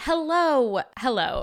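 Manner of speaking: bright and cheerful. Opening the episode with a greeting: cheerful greeting. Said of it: "I said that so cheerfully".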